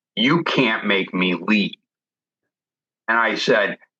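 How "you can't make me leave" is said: imitated grumbling voice. Retelling a voice heard while clearing a house: imitating a grumbling voice. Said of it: "this grumbling voice that said".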